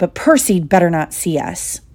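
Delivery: ordinary delivery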